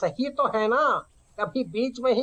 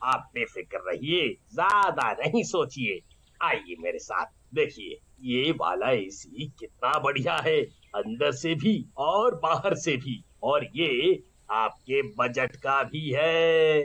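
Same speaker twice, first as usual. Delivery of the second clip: deep, very low, coaxing, reassuring voice; 10 semitones lower, 3 dB quieter than usual. A shopkeeper talks to a customer buying an air conditioner, in a shopkeeper character voice. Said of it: "और दुकानदार बोलता है, / और दुकानदार बोलता है, / और दुकानदार बोलता है".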